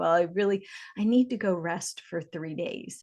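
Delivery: put-on mocking tone with attitude. Imitating a very spiritual person who lacks drive, with a bit of tone. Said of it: "I say that with a little bit of tone".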